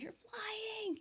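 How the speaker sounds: mock shrill shriek, very high. Retelling hearing news from a doctor and jumping up: retelling her own scream. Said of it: "and I screamed".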